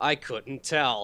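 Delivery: heavily sarcastic tone at full strength. Joking about miniature movie sets you could spot: as sarcastically as possible. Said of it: "I'm gonna say this as sarcastically as possible".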